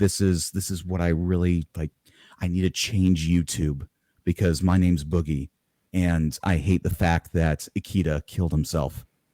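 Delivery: grave, hushed, dead-serious confessional tone. Showing a best attempt at a serious YouTube voice: dead-serious YouTube voice. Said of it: "kinda voice".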